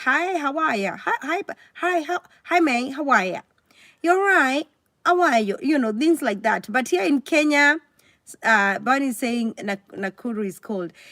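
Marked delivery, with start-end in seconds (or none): 0.0-5.6 put-on chatty, UK-style British accent. Speaker compares how people greet in different countries, imitating a British greeting. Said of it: "like in U K, they will be like".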